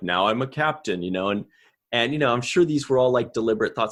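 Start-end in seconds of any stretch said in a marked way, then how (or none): 0.0-1.0 put-on slightly lowered, deeper, older-sounding voice. Showing how an actor lowered his voice for an older Nog: imitating older Nog's lowered voice. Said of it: "made it a little lower and he spoke a little bit more like this".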